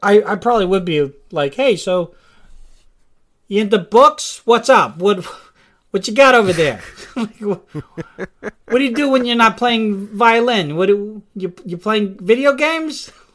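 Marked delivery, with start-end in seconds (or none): 1.5-13.1 put-on sudden Boston accent, higher, slower. Imagining what he would say to someone, speaker slips into a boston accent. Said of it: "Why do I sound like this?".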